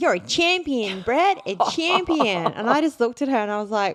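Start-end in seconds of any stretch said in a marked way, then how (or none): 0.0-2.5 put-on full-on, broad, high-pitched bogan Australian accent. Recounting what a woman said to a man: broad bogan Aussie accent. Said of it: "most like bogan Aussie accent I've ever heard".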